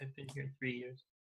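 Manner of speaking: very hushed, barely audible under-the-breath mutter. Voicing a character replying to being called new: quietly under her breath. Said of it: "Quietly under her breath, she's like".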